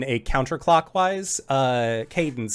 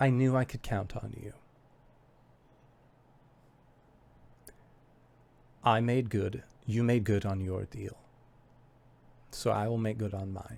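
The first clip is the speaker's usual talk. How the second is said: hushed, low, very quiet half-whisper; 4 semitones lower, 9 dB quieter than usual. Narrator voicing a woman as she embraces the listeners: half-whispering. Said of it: "you hear her whisper".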